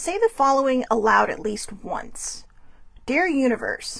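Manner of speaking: plain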